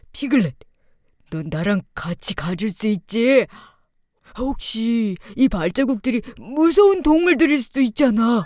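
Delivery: soft, gentle, slow, thoughtful teddy bear voice. A teddy bear character asks Piglet to come along: gentle, musing teddy bear.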